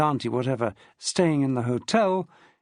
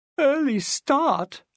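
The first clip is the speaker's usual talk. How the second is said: faint, weak, very high-pitched outcry; 10 semitones higher than usual. Reading a novel aloud, a tired guest protesting: crying out weakly. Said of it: "Pansy cried weakly".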